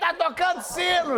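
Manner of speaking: mock shout, high and slow, calling out.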